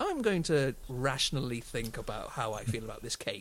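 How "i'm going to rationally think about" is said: ordinary delivery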